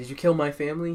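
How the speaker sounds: imitated crying, tearful voice. Retelling an anime scene, voicing the girl as she cries, imitating someone crying. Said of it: "she's crying".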